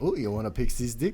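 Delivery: Aussie-accented voice. Showing how a phrase sounds said in an australian accent. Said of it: "You do it with the Australian accent".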